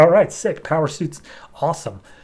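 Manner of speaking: normal talking voice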